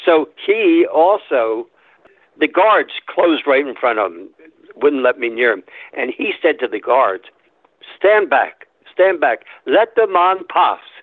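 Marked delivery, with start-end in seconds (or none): 8.0-10.8 put-on British accent, pitched up. Quoting what a man told his guards: British accent. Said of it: "British accent".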